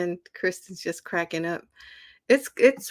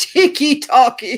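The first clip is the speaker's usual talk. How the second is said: very loud, high, fake British accent; 7 semitones higher, 10 dB louder than usual. Repeating a funny word from a viewer's message: put-on British accent. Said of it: "I must say it like a Brit".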